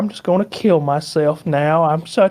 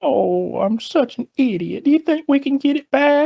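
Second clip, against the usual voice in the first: put-on very high, slow, sorrowful old-lady lamenting voice; 9 semitones higher than usual. Retelling a friend's grandmother overheard on speakerphone, imitating a sad grandmother. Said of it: "like really sad".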